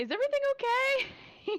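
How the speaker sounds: loud whisper-yell pitched very high. Leaning over to another character in a bar: whisper yell. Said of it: "whisper yell in a bar and be like".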